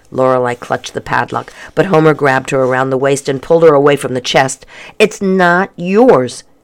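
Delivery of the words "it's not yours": words pushed out on a groan. A boy pulls a girl away from a chest, with a groan. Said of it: "he said with a groan".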